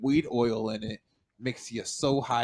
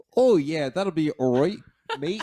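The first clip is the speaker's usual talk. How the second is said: New Zealand accent, raised and high; 5 semitones higher, 5 dB louder than usual. Challenged to try it, the speaker says a line in a new zealand accent. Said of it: "my New Zealand accent".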